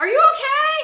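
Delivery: high-pitched, loud worried shout.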